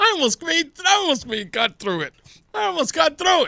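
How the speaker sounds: talking through laughter. Apologizing after failing to finish a sentence, laughing while talking. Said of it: "but I'm laughing".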